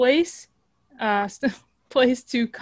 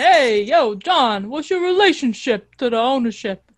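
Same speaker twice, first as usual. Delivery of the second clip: put-on Brooklyn accent, slower; 4 dB louder than usual. Showing how someone could ask a press-conference question, in a Brooklyn accent. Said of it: "Like you do a Brooklyn accent".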